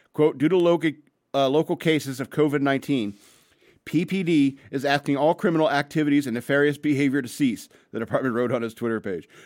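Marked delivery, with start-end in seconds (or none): none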